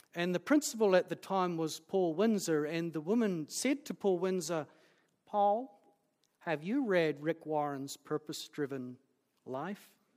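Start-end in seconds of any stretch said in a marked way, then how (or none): 5.3-9.9 put-on American accent. Retelling an American scholar's question to a college principal: American accent. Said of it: "I should drop the accent".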